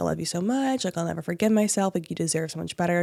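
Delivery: ordinary delivery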